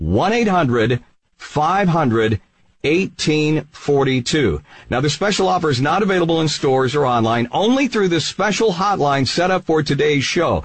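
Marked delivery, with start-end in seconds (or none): 0.0-4.6 slow, deliberate delivery, each part spaced out carefully. Host giving the hotline number so viewers can write it down, slow and deliberate. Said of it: "I'm going to say it slowly".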